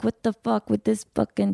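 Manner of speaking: irritated, fed-up, rough, creaky annoyed voice. Showing another speaker the kind of line wanted: mock annoyed. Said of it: "the perfect voice to just be annoyed".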